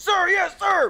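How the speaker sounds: very high, loud, shouted soldier-style voice. Imagining a military larp game as the soldier: playing a soldier. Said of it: "if I'm the soldier, I'm like this".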